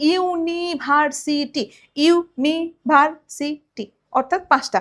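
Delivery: University said slowly, syllable by syllable.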